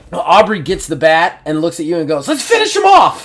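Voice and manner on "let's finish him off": very high, manic, eager squeal. The storyteller voices Aubrey grabbing the bat and looking at you, Aubrey as a berserker psychopath. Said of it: "like a little berserker psychopath".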